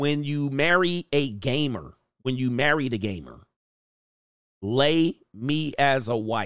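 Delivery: normal talking voice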